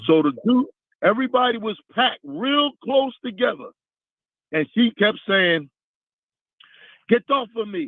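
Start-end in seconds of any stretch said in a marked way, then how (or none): 7.1-7.9 put-on speaking with a Jamaican accent. Retelling what a girl kept saying in a packed crowd: jamaican accent. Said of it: "with a like a Jamaican accent".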